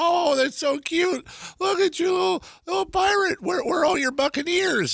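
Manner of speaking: put-on elderly woman, pitched very high. Telling a pirate joke, voicing the old lady at the door: old lady voice. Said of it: "the old lady answers the door, and she goes".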